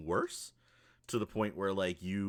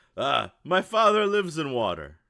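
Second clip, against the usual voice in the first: very loud, high, swooping, drawn-out bellowing yell; 8 semitones higher, 12 dB louder than usual. Voicing a character calling out as the group passes: yelling out. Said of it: "he yells out".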